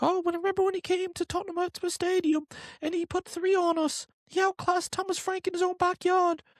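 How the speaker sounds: put-on British accent, pitched very high. Imagining what people will say about a past match, put-on british accent. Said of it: "that's kind of my British uh, accent".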